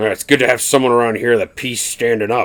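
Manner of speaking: grumpy, grizzled, grumbling voice. Sharing a favorite movie quote with the group, in Harrison Ford grumpy dad voice. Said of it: "in his very like grumpy, grizzled nineties dad voice says".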